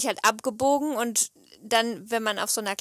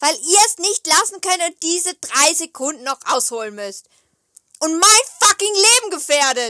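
very loud, raised, mad, angry rant; 6 semitones higher, 8 dB louder than usual. Venting about drivers who put the speaker's life in danger, angry. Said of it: "ich bin so sauer auf die Autofahrer".

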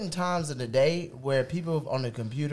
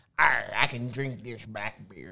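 talking like a pirate; 4 semitones lower than usual. Tasting a drink after being told to say arr: talking like a pirate.

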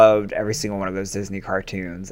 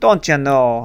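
put-on Wisconsin accent, high-pitched and raised; 6 semitones higher, 6 dB louder than usual. Recalling how a TV show's mom talked, in a Wisconsin accent. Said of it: "his mom had kind of like a Wisconsin".

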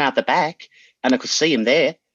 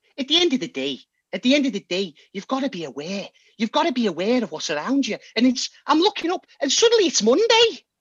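put-on Liverpool accent, pitched higher; 10 semitones higher than usual. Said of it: "any stereotypical line you want".

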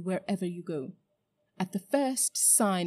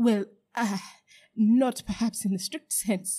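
halting, stumbling, stammering, faltering voice; 3 semitones higher, 4 dB louder than usual. A man answers the witch's question about his royal blood, stammering. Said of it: "stammered Uncle Andrew".

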